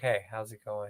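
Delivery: very deep, very low, soft, hushed voice. Speaker shows how he would light a candle and set the mood, deep voice. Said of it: "Get you a fucking deep voice going".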